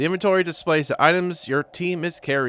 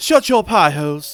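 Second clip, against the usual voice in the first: put-on woman's voice, British-sounding, louder; 3 semitones higher, 6 dB louder than usual. Reading game dialogue aloud, voicing a character: put-on woman's voice going British. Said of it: "Every time I try to do a woman's voice, I go British".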